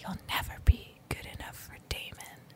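acted-out whisper. Telling how a friend pulled the speaker aside, retelling a whisper. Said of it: "he whispered".

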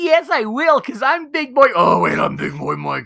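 very high, swooping, teasing, mocking voice. Speaker mocks the other speaker by imitating him back. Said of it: "You're like".

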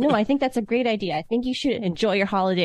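ordinary talk

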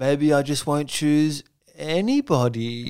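slow, drawn-out, teasing musing in contestant voice. Retelling a contestant teasing before ad breaks: imitating Felix's voice. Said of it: "That was a good voice".

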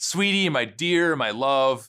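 put-on, laid-on-thick seductive voice. Retelling how Delilah turned her charm on Samson, Delilah, mock-seductive. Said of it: "she says these words seductively".

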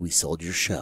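very low, deep, hushed, dramatic delivery. Speaker retelling how a man broke the news after a drawn-out beat; imitating a dramatic delivery. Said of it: "Like in a voice like that".

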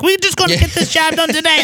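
very high, mocking little-man voice. Imitating a superintendent with little man syndrome: imitating a high voice. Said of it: "the little man syndrome with the high voice".

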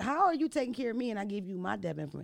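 usual speaking voice

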